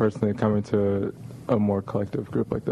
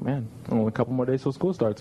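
normal talking voice

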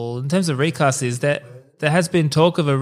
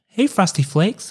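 mock deliberate delivery, pitched up, every word placed; 5 semitones higher than usual. Mocking how an actor talks in the film: Ryan Reynolds voice. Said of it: "he talks like this".

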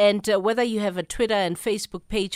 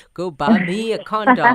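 laid-on American-style delivery; 6 dB louder than usual. Joking about craving a corn dog, in an American accent. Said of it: "I'm saying it like, like the Americans".

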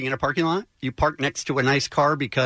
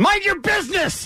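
put-on screaming old man voice. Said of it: "I'll play the old man".

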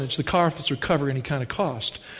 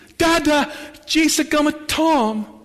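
put-on very high, slow, babbling toddler voice; 11 semitones higher, 3 dB louder than usual. Retelling what a little son said at the window: imitating baby talk. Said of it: "he said this in baby talk".

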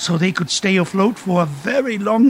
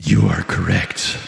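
solemn dark hero tone, lower. Confirming the oceans hold more waste: sounding like a dark hero. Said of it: "you sound like a dark hero".

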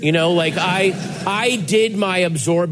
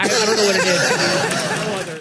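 put-on high, slow little-girl voice. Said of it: "this is my daughter saying".

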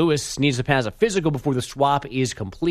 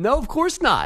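high, snippy, curt tone. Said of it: "don't be so snippy about it".

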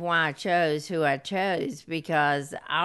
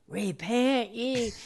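put-on man's hollered call; 5 semitones higher than usual. Retelling how a man came into the back of a church, retelling a holler. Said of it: "what he did was he hollered".

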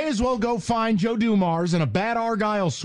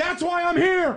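high-pitched shouting, yelling; 8 semitones higher than usual. Ranting to the other speaker about a team's trades: yelling. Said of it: "Why are you yelling at me?".

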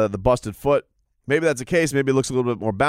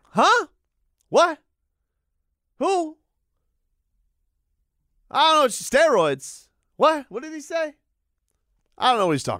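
very high-pitched babble, feigning being hard of hearing; 13 semitones higher than usual. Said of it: "Pretending you're deaf".

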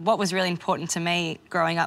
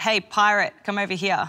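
put-on yelling, a loud shout; 3 semitones higher than usual. Retelling how a boy in drama class called out: imitating someone yelling out. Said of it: "he just yells out".

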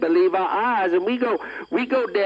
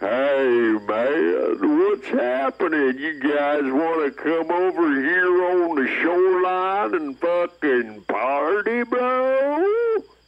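very slow, blissed-out stoned drawl; 3 semitones lower than usual. Retelling what a high alligator said to the group: voicing a high alligator. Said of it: "His eyes be rolling in his head".

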